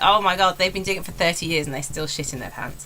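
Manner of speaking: ordinary delivery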